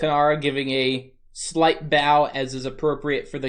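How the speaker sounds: normal talking voice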